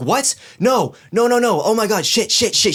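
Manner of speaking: very high, panicked outburst of cries. Retelling a wife on the phone hearing of a wellness check, acting out her panicking. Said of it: "She like starts panicking on the phone".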